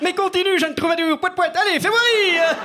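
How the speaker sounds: haughty, superior-sounding voice.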